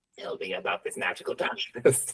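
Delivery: whispered, sinister dark-lord villain voice. After a dice roll in a tabletop game, sounding like Emperor Palpatine. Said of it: "Why did you sound like Emperor Palpatine right there?".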